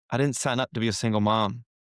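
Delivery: ordinary delivery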